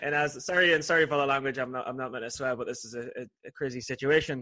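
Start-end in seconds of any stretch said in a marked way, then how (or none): none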